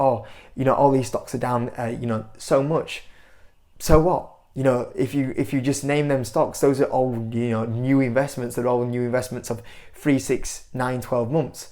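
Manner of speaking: ordinary talk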